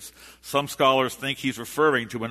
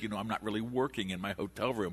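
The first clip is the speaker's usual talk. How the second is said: acted sheepish tone, quieter; 3 semitones lower, 11 dB quieter than usual. Associate minister quotes the senior minister's admission during a trip; retelling a sheepish remark. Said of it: "He kind of sheepishly said".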